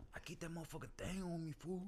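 put-on cowboy voice with Mexican accent. Playing a voice round with friends: cowboy with Mexican accent. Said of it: "Cowboy with a Mexican accent".

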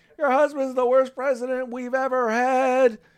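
very high shouted yell. Recounting a heckler at the president's wife, retelling a heckler's yell.

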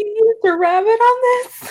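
mock very high, tearful crying child voice. Imagining a kid reacting to a toy made of rabbit: mock crying child. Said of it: "my kid would be, like, crying".

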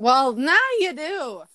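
voice cracking repeatedly in a row. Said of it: "super hot voice cracks all in a row".

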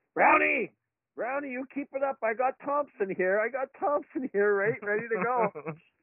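very high-pitched, acted-out coach yell. Retelling how his coach yelled at an opposing player: imitating a coach yelling. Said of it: "he starts yelling at Brownie".

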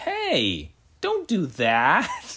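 very slow, gentle, sing-song mild scolding. Retelling a father's reaction to his daughter with a shotgun, imitating light scolding. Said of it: "the tone he uses is basically like he's like lightly scolding her".

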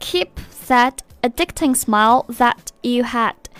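plain

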